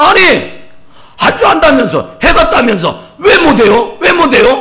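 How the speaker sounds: loud, high, angry, insistent badgering.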